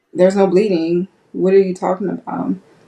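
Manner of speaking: plain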